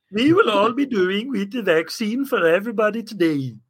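exaggerated cartoonish Swedish accent. Asked to do a Swedish accent, Sesame Street put-on Swedish accent. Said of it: "Like that? I don't know if that's a Swedish accent. I'm doing Sesame Street".

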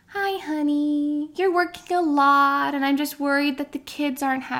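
very quiet, slow, meek, timid voice. Acting out a wife raising a worry with her husband: imitating a timid wife, very quiet. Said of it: "very, very quietly and timidly says".

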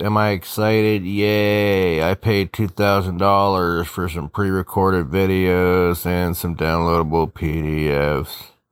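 bored, sleepy voice. Speaker talking about paying $2,000 for a course of videos and PDFs, bored, sleepy voice. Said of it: "I'm already falling asleep. You can hear it in my voice".

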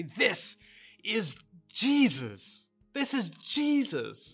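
very slow, loud, passionate, impassioned delivery. Recounting how Father Juan raised the host and spoke, slow and loud. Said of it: "he would say slowly and loudly".

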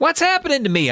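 very high, tiny, squeaky little voice. The first-person narrator, just realizing they are flying, speaks in a little squeaky voice. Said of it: "I tried in a little squeaky voice".

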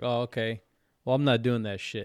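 usual speaking voice

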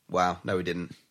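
acted monotone commentator voice. Recalling wrestling commentary on a pinfall, imitating Vince's uninterested tone. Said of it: "Literally in that tone".

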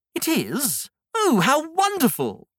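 thrilled, marvelling, excited, high, swooping delight. Learning what a crow's nest is before a week at sea, excited. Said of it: "You seem very excited to spend the week".

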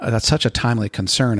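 plain

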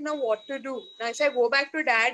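ordinary talk

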